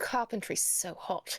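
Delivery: put-on British accent, slipped into. Agreeing with the others about carpentry, in a British accent. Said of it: "I keep doing the British accent".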